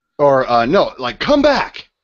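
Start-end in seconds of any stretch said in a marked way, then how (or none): 1.2-1.8 commanding officer's voice, higher and louder. Yelling at guards in Alistair's voice: yelling in Alistair's voice. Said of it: "In, in his voice".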